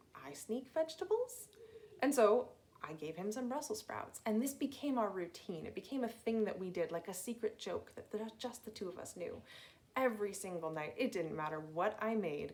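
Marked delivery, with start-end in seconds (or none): 0.2-1.5 put-on tiny, high-pitched little toddler voice. Retelling what he asked after catching the speaker sneaking vegetables, little tiny voice. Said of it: "in his little tiny voice".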